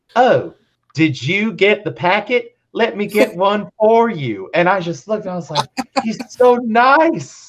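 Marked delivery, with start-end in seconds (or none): 0.2-4.5 put-on kindly, friendly Pennsylvania accent. Retelling what a man said at a meeting, in a Pennsylvanian accent. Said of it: "in this wonderful Pennsylvanian accent".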